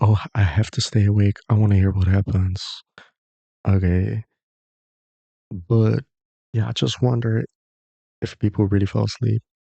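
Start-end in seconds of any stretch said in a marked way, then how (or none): none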